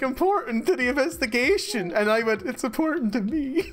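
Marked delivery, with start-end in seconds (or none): 2.4-3.7 put-on defeated tone. Retelling own reply during the investigation: imitating own defeated tone. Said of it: "I sounded so defeated".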